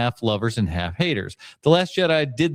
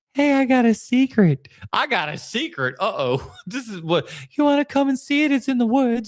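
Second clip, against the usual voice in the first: put-on very high little kid voice; 12 semitones higher than usual. Retelling what a weird kid in the woods says to you, in a really high little voice. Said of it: "He's got that really high little voice".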